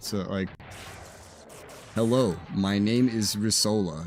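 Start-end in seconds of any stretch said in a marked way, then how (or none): 1.9-4.1 robotic, stiff, slow put-on General American accent. Introducing oneself by name as a robotic standard American accent. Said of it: "I could try really hard to do like the the standard American accent".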